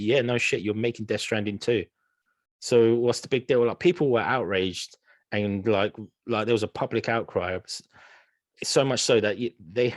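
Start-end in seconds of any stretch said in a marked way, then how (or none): none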